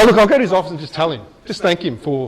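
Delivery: ordinary delivery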